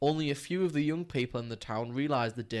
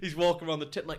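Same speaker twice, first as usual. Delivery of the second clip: usual speaking voice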